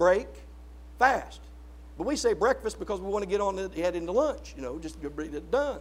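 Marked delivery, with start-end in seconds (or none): 0.0-1.4 "break" and "fast" split apart with a pause. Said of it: "Breakfast means to break the fast".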